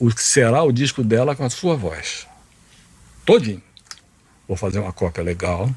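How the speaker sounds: ordinary talk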